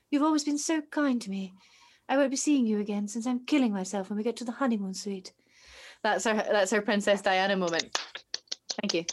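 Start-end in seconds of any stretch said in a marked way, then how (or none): 0.1-5.3 mock deadpan voice, faster pace. Acting out a woman's parting words to a man after a kiss, mock-deadpan, channeling Princess Diana. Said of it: "she has a very deadpan channeling Princess Di moment where she's like".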